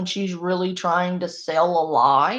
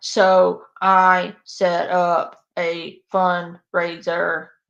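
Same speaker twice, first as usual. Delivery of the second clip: each word set apart, very slow; 4 dB louder than usual. Mimicking a woman trying to sell you on something, with slow, spaced-out words. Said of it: "she spaces her words out like that".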